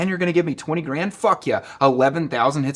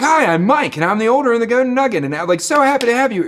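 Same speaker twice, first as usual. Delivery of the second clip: raised, high announcement-style voice; 8 semitones higher, 7 dB louder than usual. Retelling a casino owner's announcement to the casino: imitating Mike the casino owner. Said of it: "He was like".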